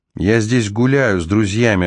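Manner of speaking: ordinary delivery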